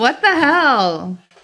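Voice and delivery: loud, high yelled outburst with "hell" stretched out. Reacting while solving a puzzle together: yelling. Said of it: "Sorry if I'm yelling".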